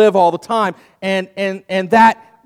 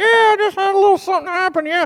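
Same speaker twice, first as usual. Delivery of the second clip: very high, pitched-way-up puppet voice; 12 semitones higher than usual. A ventriloquist answers his own question as his puppet, Manny puppet voice. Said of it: "Is your voice okay?".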